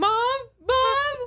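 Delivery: put-on high, panicked scream like a lost child. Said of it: "I just started screaming".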